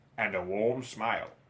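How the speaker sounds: ordinary delivery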